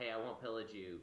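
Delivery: ordinary delivery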